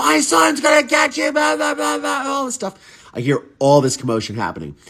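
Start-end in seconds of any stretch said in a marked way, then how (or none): 0.0-2.5 mock shrill, very high top-of-the-lungs scream. Retelling what the grandmother screamed downstairs: imitating someone screaming. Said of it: "screaming at the top of her lungs".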